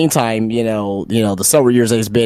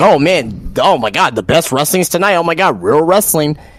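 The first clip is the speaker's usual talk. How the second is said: overeager, gushing fan voice, pitched up; 7 semitones higher than usual. Mocking someone who pretends one league doesn't exist: imitating an excited fan mockingly. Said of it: "and he's like".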